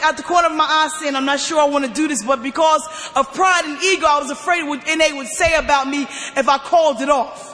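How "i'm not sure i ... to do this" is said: ordinary delivery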